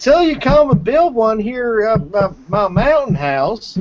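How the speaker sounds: exaggerated, over-the-top Georgia accent, pitched very high. Retelling what a caller on the phone said: over-the-top Georgian accent. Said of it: "such the just over-the-top Georgian accent".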